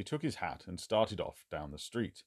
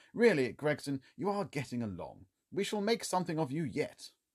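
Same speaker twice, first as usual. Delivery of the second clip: supportive, encouraging, pitched-up tone; 7 semitones higher than usual. Holmes speaks to Gregson after the detective's report; encouraging. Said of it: "in an encouraging voice".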